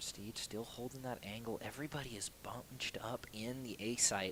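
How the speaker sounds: soft, very quiet golf-commentary half-whisper. Commentator calling a stressful round of play, half-whispering. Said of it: "I don't know why I'm whispering".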